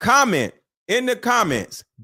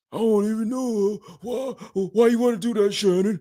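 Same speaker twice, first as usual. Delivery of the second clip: mock reluctant, unwilling, unsexy voice; 3 dB quieter than usual. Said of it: "She ain't even sounding cute".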